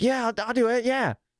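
mocking eager tone. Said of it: "You're just like".

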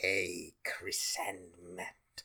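very low, deep, slow, hushed voice. Reading out a listener email as asked: Emperor from Star Wars voice. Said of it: "read in the voice of the Emperor from, um, from Star Wars".

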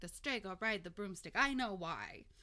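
put-on half-joking, really serious tone. Retelling what a woman said after calling them funny, half-joking, real serious. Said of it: "she said it like kind of funny, but like real serious".

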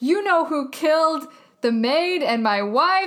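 put-on, indiscreet, very loud announcing voice. Retelling what a man said to a woman, imitating him talking really loud. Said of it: "like really loud".

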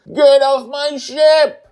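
very high, very loud, drawn-out shout. Reading a story aloud, a character orders everyone off her ship: yelling. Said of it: "Joy yells at us".

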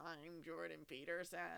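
flat robotic monotone voice. Mimicking how someone else's impression came out on a podcast, robotic Jordan Peterson impression. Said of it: "You sounded like a robot".

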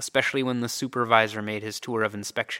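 plain

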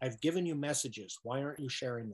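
normal talking voice

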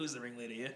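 put-on Australian accent. Quoting a line from the film Wolf Creek: Australian accent impression. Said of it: "that was a pretty decent, uh, impression".

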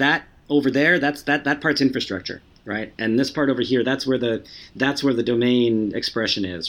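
plain

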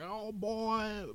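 very high-pitched, put-on Alabama accent. Comparing Midwestern and Southern accents: imitating an Alabama accent. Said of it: "it's not like Alabama, like".

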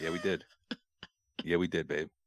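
cool movie-hero voice, low and soft.

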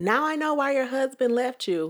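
taunting yell. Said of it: "yelled something about".

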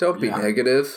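weird, light, playful yet psychotic delivery. Quoting a movie character's line: imitating Nicolas Cage, weird playful psychotic. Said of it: "in a very sort of, like, weird, playful, but also psychotic way goes".

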